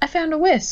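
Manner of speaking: proud, triumphant, very high-pitched voice. Appearing from inside the store to announce something, triumphant announcement. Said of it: "announcing triumphantly".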